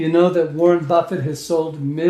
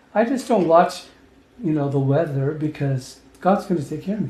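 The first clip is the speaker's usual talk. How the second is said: usual speaking voice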